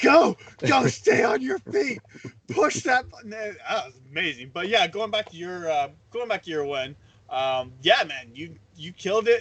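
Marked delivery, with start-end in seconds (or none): 0.0-3.3 high, put-on fan screaming. Retelling watching a game, imitating screaming at the team. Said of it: "screaming at the team".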